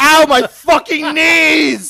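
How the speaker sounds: very high, very loud, very slow pained howl. Mocking how he imagines an athlete running: mock-screaming in pain. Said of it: "he's screaming".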